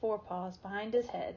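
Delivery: ordinary delivery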